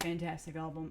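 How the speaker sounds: usual speaking voice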